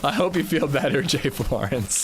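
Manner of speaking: speech with laughter running through it. Answering someone who just tested positive for COVID, laughing while talking. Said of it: "I'm sorry I'm laughing".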